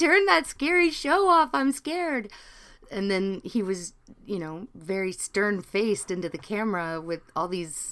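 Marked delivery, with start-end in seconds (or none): 0.0-2.3 put-on shrill, very high, very loud scared-child crying wail. Retelling being frightened by a show as a child: imitating own childhood crying. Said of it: "and I would start crying".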